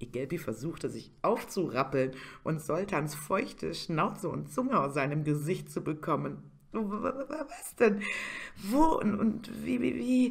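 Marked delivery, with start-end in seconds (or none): 6.7-10.3 very high, very slow, drowsy, sleepy stammer. A narrator reads Igelpi's muttered questions on being woken, stammering. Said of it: "stotterte er vor sich hin".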